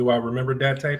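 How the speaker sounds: ordinary talk, nothing marked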